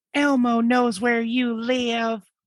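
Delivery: put-on very high-pitched doll voice with Southern accent. Telling a story about a family's Elmo doll, speak as the doll: Elmo doll voice, southern accent. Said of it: "Why does he have a southern accent?".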